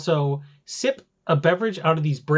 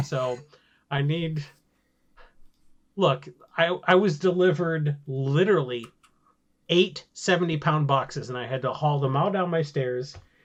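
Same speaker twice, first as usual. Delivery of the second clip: normal talking voice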